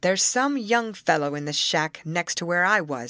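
ordinary delivery, nothing marked

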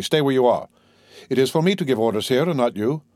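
usual speaking voice

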